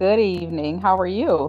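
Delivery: boring, flat, unexcited delivery. Opening a live greeting, a take later called boring: boring, flat delivery. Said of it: "you just sound so boring".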